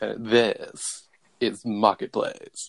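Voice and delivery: self-satisfied broadcaster voice. Joking about NPR voices on a show, a host does the douchey Kai Ryssdal voice. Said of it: "I do the douchey Kai Rizdahl voice".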